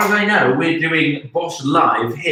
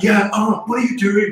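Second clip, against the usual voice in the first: high-pitched, barking put-on impression. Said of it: "can you do a Gordon Ramsay impression?".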